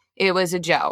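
plain

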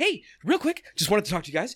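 mock eager, bouncing, excited, high, rapid patter. Imitating a client named Ron, mock excited voice. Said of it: "he's very excited with his, like, his body language".

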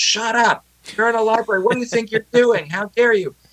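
play-acted, very high-pitched, yelled scolding tone. Retelling how people in a library yelled at them, retelling a yell. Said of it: "are yelling at me right and left".

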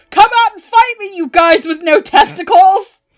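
loud, high-pitched hollered yell. Retelling what a girl imagined yelling on the subway, retelling a yell. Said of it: "You can't start yelling like that in the game".

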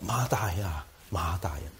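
mock tender, warm, close, intimate calling out. Retelling how a name was called, acting out a close, intimate tone. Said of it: "耶穌係用一個好親近嗰種嘅語調同佢講".

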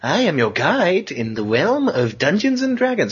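high, swooping, animated cartoon narrator voice. Showing how the Dungeon Master sounds kind of like Fred, in a Dungeon Master voice. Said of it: "he sounds kind of like Fred going".

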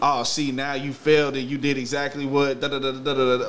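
ordinary delivery

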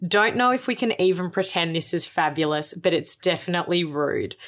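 ordinary delivery

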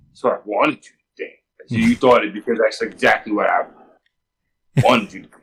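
very low muttered aside under the breath. Retelling a comic scene where a character speaks: imitating muttering under his breath. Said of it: "WizKid says under his breath".

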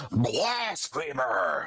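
thin, shriveled, withered, slightly shrill voice. Voicing a priest who bursts out at the players: loud booming shrill voice. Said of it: "loud, booming, shriveling voice, um, slightly shrill".

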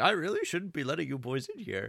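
genial, put-on elderly policeman voice. Acting out a genial old policeman character in a put-on old man voice. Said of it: "that's my old man voice".

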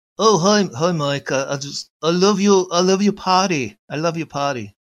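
put-on British accent, high, slow, loud, drawled, stumbling. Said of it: "it's a British accent".

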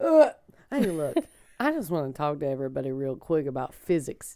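low, laid-back character voice. Talking with the others, the speaker addresses everybody in a Ted Lasso voice. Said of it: "I just talk like this whenever".

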